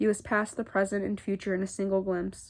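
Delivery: plain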